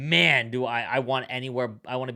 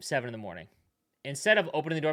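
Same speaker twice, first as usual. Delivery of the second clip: ordinary talk, nothing marked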